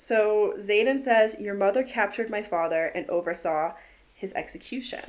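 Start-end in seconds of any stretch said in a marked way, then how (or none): none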